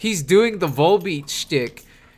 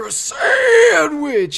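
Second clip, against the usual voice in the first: play-acted, very high, loud, shrill shriek; 12 semitones higher, 5 dB louder than usual. Retelling the commercial's punchline: imitating a shrieking New Yorker. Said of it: "he's shrieking it out".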